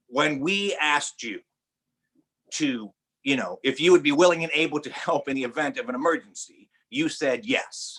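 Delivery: discreet, confidential, private tone. Retelling what a flight attendant leaned over and said: imitating someone speaking very quietly. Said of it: "she said to me very quietly".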